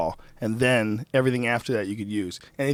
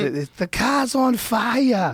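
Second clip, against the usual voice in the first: put-on thick Boston accent, higher pitch; 11 semitones higher, 4 dB louder than usual. Retelling a prank call to a rental car company: heavy Boston accent. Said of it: "this heavy Boston accent".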